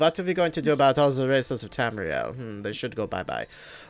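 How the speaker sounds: put-on, very effeminate, swooping German accent. Showing the voice he planned for a game character, in a very effeminate german accent. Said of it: "very effeminate German accent".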